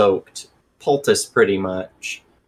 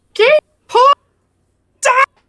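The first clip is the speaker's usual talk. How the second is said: shrill squeak, very high and very loud; 9 dB louder than usual. Announcing that the game is paused: high-pitched exclamation. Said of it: "my fucking high-pitched voice".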